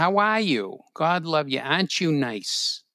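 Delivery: South Boston neighbourhood accent. Describing the people of the Southie neighborhood where the speaker grew up, Southie Boston accent. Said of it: "People who talk like this".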